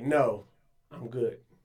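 mock-stern firm voice. Retelling turning down a man's offer to take a photo: retelling a stern refusal. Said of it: "Why are you so stern with them?".

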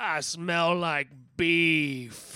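very loud, high booming bellow with "beef" drawn out. Retelling a scene where an old man grabs his eye and cries out: bellowing. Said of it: "he just bellows out".

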